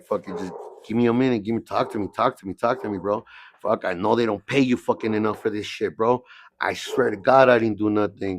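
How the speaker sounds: normal talking voice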